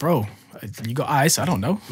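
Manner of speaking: ordinary delivery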